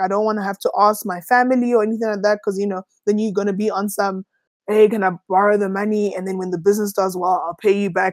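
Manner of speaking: ordinary talk, nothing marked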